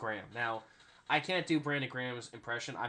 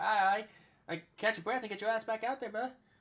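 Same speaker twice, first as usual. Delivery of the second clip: very high pitched, casual, encouraging tone; 9 semitones higher than usual. Retelling a mic'd up moment of DeVonta Smith: imitating DeVonta Smith. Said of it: "you sound like him".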